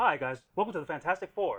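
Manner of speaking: loud nineteen-sixties announcer voice. Describing the show's opening, attempting an old-timey 1960s Fantastic Four voice. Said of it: "that old timey nineteen sixties".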